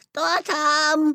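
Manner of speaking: high, put-on granny voice. Answering a knock at the door, trying to speak in grandma's voice. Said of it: "стараясь говорить бабушкиным голосом".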